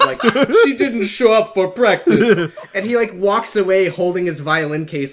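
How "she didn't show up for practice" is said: classic horror vampire voice, raised and high. Retelling a band student's reply when asked where Amy is: vampire voice. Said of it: "he had like a vampire's voice".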